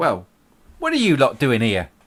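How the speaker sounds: put-on loud, swooping, cranky grumpy old woman voice. The narrator voices an old woman meeting the visitors: grumpy old woman voice. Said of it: "the grumpy old woman again?".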